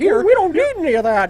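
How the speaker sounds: stumbling classic film-star delivery, tripping over the start. Asked to say ghosts and goblins, answering in a Jimmy Stewart voice. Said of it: "it's not me doing the voice".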